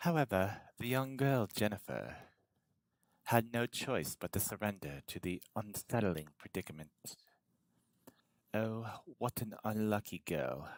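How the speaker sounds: put-on British accent, storybook narrating style. Reading a story aloud to viewers, narrate in a British accent. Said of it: "should I do this in a British accent?".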